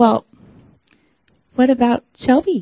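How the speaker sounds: small, little voice. Retelling a remark overheard at work: imitating a little voice. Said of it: "I hear this little voice say".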